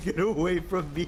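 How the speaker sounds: terrified, spooked, scared monster voice. Voicing a spooky hollow that runs around in the game: voicing a terrified creature. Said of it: "He's so terrified".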